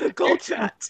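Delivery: talking while breathing in. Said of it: "you're talking while breathing in".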